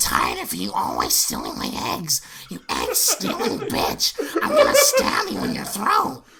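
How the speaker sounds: housewife character voice, cartoonish. You perform for listeners, one of whom may never have heard this, a Marge Simpson impression. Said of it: "He's really good at doing Marge Simpson".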